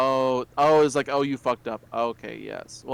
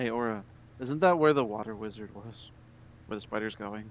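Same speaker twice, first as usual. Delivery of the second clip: soft, hushed half-whisper; 3 semitones lower, 7 dB quieter than usual. In a tabletop game, a character asks a companion a question, half-whispering. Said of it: "I'm whispering".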